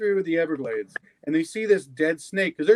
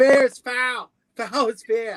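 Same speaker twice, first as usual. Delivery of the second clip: shaky, bad Boston accent, pitched up; 6 semitones higher, 3 dB louder than usual. Speaker tries a Shakespeare line the way Boston would say it: bad Boston accent. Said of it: "I can't really do the accent very well".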